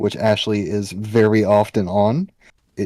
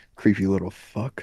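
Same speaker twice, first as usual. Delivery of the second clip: muttering under breath, much quieter; 4 dB quieter than usual. A player's character takes the package and mutters about the robot, muttering under breath. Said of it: "I'm just gonna mutter under my breath".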